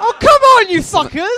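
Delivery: upset, voice jumping high. Reacting with mock outrage to others' response: upset, very high-pitched voice. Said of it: "when he got upset, his voice went to some, like, way high octave register".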